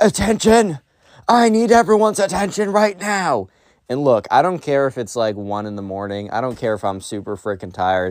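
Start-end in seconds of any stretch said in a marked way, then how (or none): 0.0-3.5 shrill, very high, strident, insistent shout. Storyteller retells a kid addressing a half-asleep class: retelling the emo kid's shout. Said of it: "the emo kid shouts".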